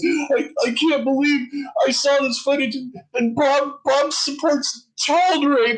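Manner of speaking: sobbing, weepy, high and drawn-out crying. Retelling a reaction to footage the next day: imitating Arwen crying. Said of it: "he follows it up the next day and he starts crying".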